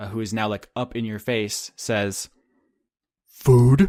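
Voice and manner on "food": very loud, huge, menacing, terrifying orc voice. Voicing a large, terrifying orc in the player's face: terrifying orc voice. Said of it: "the large, terrifying, very strong orc".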